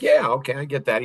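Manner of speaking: normal talking voice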